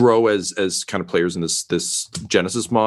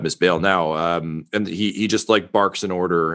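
ordinary talk

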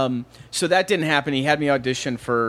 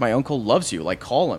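ordinary talk, nothing marked

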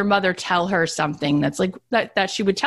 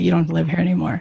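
whispered voice. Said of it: "Now you're gonna whisper to her".

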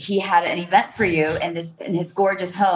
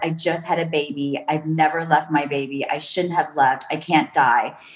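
put-on near-tearful pleading voice, on verge of crying; 2 semitones lower than usual. Retelling what a friend said while sheltering from a tornado: imitating someone almost crying. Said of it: "you were almost crying".

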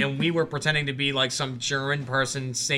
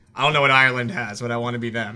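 ordinary delivery

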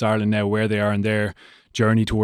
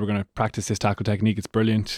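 deadpan, quieter and faster; 3 dB quieter than usual. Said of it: "Razzy was unbelievably deadpan in the press conference".

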